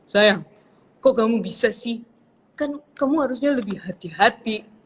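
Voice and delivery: loud, cool-sounding man's voice. Retelling what her husband said about the broken watch, Mas Agus voice impression. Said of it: "Suara Mas Agus".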